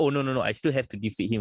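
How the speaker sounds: usual speaking voice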